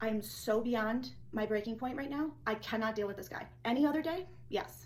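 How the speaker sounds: ordinary talk, nothing marked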